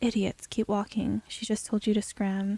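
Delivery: ordinary delivery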